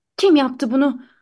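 plain reading voice

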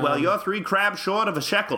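put-on rapid old-time radio announcer voice. Challenged to do the rest of the show in the accent; rapid mid-Atlantic announcer accent. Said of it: "You can't do the old mid-Atlantic accent?".

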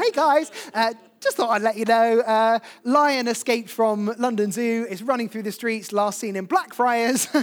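chatty, laid-back, casual tossed-off delivery. Imagining a news alert popping up on a phone, really casual BBC News alert. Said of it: "a really casual BBC News alert".

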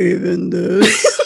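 mock sultry bedroom-voice whisper. Recapping a scene, the speaker acts out ma'am whispering, imitating a bedroom-talk whisper. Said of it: "it's ma'am's bedroom talk".

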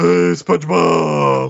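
dopey cartoon voice, high, rough, loud and creaky. Host greeting listeners at the show's start, Patrick voice. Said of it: "I should give a Patrick expression".

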